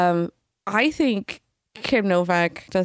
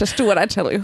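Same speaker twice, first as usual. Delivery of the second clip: put-on old film leading man, played goofy. Quoting a line from Vertigo: James Stewart impression. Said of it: "my impersonation of James Stewart in Vertigo".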